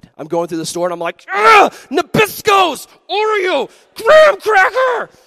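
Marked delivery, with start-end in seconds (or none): 1.3-5.1 mock very loud, high, very slow, drawn-out seething rant. After bad news from dad, speaker re-enacts a store outburst: retelling an angry outburst. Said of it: "I'm so angry".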